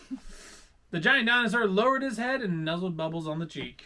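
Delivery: plain reading voice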